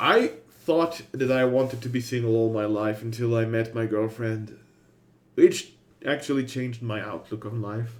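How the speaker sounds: voice cracking. Speaker talks about being single versus in a couple, voice cracking. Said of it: "My voice cracked there".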